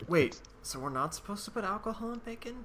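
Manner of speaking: secretive, hushed, slightly high half-whisper. Asking another player in character, quietly at a shared table: half-whispering.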